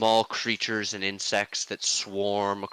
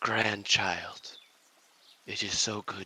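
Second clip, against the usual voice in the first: soft, quiet voice that still carries; 4 dB quieter than usual. The narrator voices a figure greeting each party member: quiet, carrying voice. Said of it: "in a quiet voice that seems to carry".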